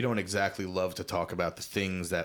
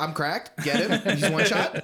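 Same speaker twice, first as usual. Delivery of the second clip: put-on young kid voice, higher and louder; 10 semitones higher, 6 dB louder than usual. Imitating how kids who play Fortnite talk: imitating kids who play Fortnite. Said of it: "the kids who play Fortnite now".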